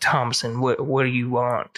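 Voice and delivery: smooth, laid-back, suave cool-guy delivery. Retelling a movie scene, voicing a cowboy character: imitating a cool suave character. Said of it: "Thank you for the voices".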